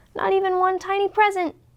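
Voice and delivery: tiny, small, high-pitched squeak. Narrator reading a children's story, voicing Mouse: squeaky Mouse voice. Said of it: "squeaked Mouse".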